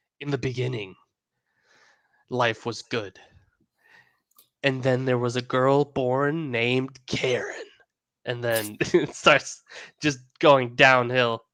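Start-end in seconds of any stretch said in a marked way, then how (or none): 0.2-7.7 epic movie-trailer voiceover narrator voice. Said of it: "you have the the trailer voice guy".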